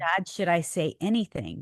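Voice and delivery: normal talking voice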